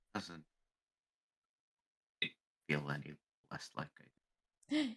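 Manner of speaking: very quiet, hushed, barely audible murmur. Player speaks in character while leaning into a hug, speaking very quietly. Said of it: "You might have to speak a little louder".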